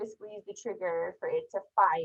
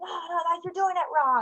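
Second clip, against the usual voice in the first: very high drill-instructor screaming, scolding tone; 11 semitones higher than usual. Describing a big military guy screaming at a first-timer: imitating someone screaming. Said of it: "like screaming at you".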